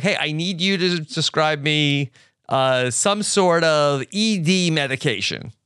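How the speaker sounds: plain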